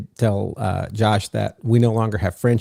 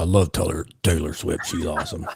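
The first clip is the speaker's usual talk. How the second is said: low, soft big-man voice with swinging pitch; 4 semitones lower, 5 dB quieter than usual. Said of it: "get that sling blade voice going".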